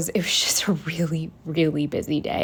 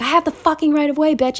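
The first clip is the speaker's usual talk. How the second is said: put-on very high, furious, pissed-off screaming yell; 10 semitones higher, 3 dB louder than usual. Retelling yelling back at a driver who honked, retelling a yell. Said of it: "I yelled at her".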